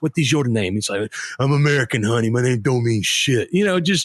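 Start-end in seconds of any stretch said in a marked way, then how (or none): 1.4-3.5 low, growling, world-weary cop voice. Riffing on TV cop characters, the speaker does a growling Bruce Willis impression. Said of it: "Bruce Willis who like growls every time".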